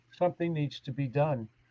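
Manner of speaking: soft, calm, proper English-accented voice. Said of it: "in my best English, calm voice".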